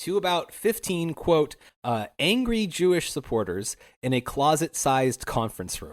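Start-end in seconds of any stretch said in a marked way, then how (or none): none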